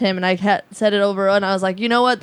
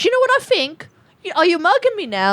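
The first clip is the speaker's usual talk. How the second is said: put-on catty, very high, swooping voice with southern English accent; 10 semitones higher than usual. Trying to do a Love Island thing before being told to shut up, impression of a Love Island girl. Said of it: "What accent was that?".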